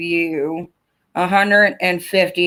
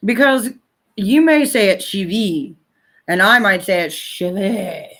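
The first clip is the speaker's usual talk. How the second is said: fake French accent, words drawn out; 2 semitones higher than usual. Speaker talking to the audience who spelled out a name, in a put-on french accent. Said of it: "I don't know why I'm using a French accent".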